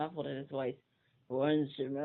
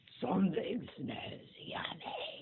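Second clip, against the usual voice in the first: soft, breathy, whispered bear voice; 4 semitones higher, 5 dB quieter than usual. Reading a story aloud, voicing the bear's line in a bear voice. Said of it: "My bear voice is not happening today".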